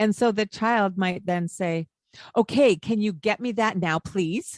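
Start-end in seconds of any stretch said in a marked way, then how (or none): 2.3-4.6 rude, bossy, demanding tone. Explaining to a listener how a child might answer, in a not polite tone. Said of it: "In a not polite tone of voice".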